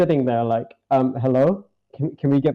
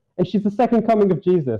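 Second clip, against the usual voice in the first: usual speaking voice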